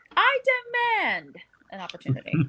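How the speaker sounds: mock insistent, demanding tone. Retelling a line a wrestler said herself: imitating Doudrop. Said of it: "I can't do it in her accent".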